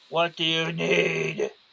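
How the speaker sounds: creepy, strange-sounding, very unusual and unsettling voice. Narrating a character approaching the dwarf, in an unsettling voice. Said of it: "says in a very unusual unsettling voice".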